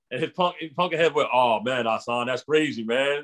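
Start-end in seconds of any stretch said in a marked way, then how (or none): 1.3-3.2 nice deep voice, taken slow. Retelling a friend's reaction to teasing: imitating a friend's deep voice. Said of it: "just how he had that nice, deep voice".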